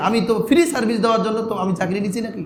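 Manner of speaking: ordinary talk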